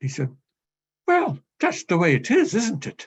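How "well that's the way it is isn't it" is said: high, swooping, sing-song Irish lilt. Retell what a man said to you after staring into space, in his wonderful Irish lilt. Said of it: "in his wonderful Irish lilt".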